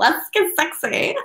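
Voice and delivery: totally goofy, high, weird nerd voice. Showing the voice used for "let's get sexy": imitating own nerdy, weird voice. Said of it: "a totally nerdy and weird voice for, like".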